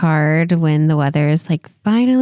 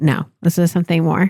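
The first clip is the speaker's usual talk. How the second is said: plain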